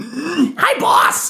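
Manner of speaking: put-on very high, tiny small-kid voice. Retelling meeting a very small kid at a Florida farmer's market; small kid voice. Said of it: "weird little, like, 14-year-old, like, very small kid".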